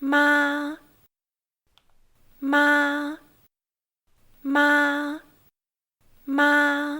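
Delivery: steady, very high, level first tone on ma. Instructor demonstrates the first tone for learners to repeat, in a level high pitch. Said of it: "the pitch stays level".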